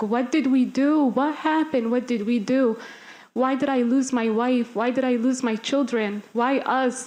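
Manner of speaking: mock anguished screaming, despairing and desperate. Recalling a father arriving at the er at night: retelling a father screaming. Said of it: "I hear the father just screaming".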